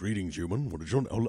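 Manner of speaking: rough, raspy-throated alien warrior voice. Retelling a kid's greeting at a Star Trek museum, doing a Klingon voice. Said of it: "my Klingon voice is good because I'm sick".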